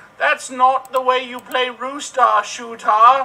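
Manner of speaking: very high shout. Retelling the attendant's line in a version made up later: imitating a shouting attendant. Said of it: "she shouted out".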